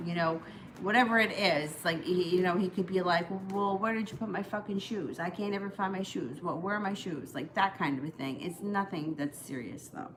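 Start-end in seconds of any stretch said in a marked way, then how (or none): none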